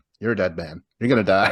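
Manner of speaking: usual speaking voice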